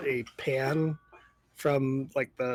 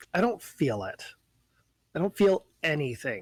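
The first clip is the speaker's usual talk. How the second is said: mocking, sarcastic tone with swooping delivery. Voicing Lilith answering a question about how she feels: sarcastic. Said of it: "really sarcastically looks at you and says".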